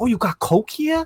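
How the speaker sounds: put-on high-pitched New York accent. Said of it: "I love Ty's accent".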